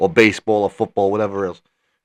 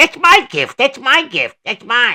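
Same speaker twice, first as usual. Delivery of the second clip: put-on very high, shrill, swooping, greedy bratty child voice; 14 semitones higher, 6 dB louder than usual. Quizzing a friend about a movie, the speaker does the Polar Express kid voice. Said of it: "That kid from uh, the Polar Express".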